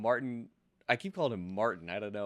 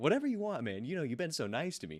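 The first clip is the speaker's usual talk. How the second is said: put-on high sarcastic tone, partly meaning it; 5 semitones higher than usual. Describing a movie scene, acting out Riggs's line to his partner, mock-sarcastic. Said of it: "Like really sarcastically".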